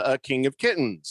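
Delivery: ordinary delivery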